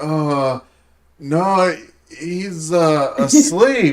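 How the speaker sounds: mock flustered, confused, very slow, halting, drawn-out delivery. Retelling answering the friends about the father: imitating a confused answer. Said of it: "but I got confused".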